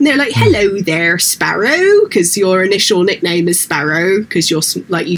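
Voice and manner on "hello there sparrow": put-on sing-song West Country accent. Showing how the characters greet you by your initial nickname, in a West Country accent. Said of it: "it's all like West Country, so they all talk like this".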